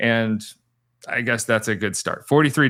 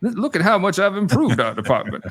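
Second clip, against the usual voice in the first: pitched-up, boastful put-on Southern gentleman voice, stumbling start; 8 semitones higher than usual. Imitating the commissioner bragging about his department: impression of the commissioner. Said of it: "this is my impression of him".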